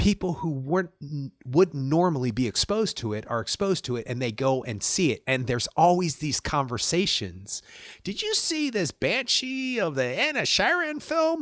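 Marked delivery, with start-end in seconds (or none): 8.0-11.4 put-on Southern accent, very high, sing-song, swooping. Imitating people chatting about a film: put-on Southern accent. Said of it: "I don't know why I do a Southern accent".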